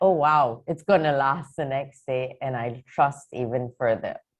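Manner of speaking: ordinary talk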